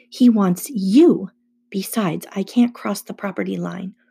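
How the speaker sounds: plain reading voice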